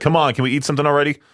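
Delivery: put-on grumpy, cranky, impatient nagging whine. Retelling own complaint while hungry on a car ride: imitating own cranky complaining. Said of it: "I get cranky during the whole car ride".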